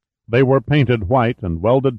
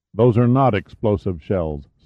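ordinary delivery

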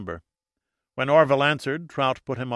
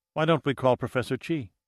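ordinary delivery, nothing marked

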